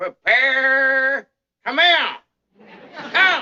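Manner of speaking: very high, very slow, drawn-out hollered bellowing. A grandpa showing the boy how to give orders, bellowing them. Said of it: "I'll show you how to beller out them orders".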